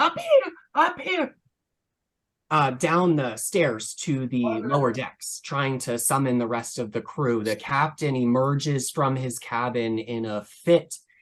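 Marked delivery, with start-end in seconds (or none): 0.0-1.4 very high, violent shrieking scream. Voicing a crew member pounding on the captain's door: screaming violently. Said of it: "just screams violently".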